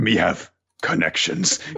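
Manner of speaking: low put-on voice. In a comedy bit about a bakery, speaking in a low voice. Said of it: "Why are you saying that in your low voice?".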